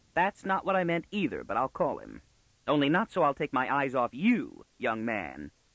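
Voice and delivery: ordinary delivery, nothing marked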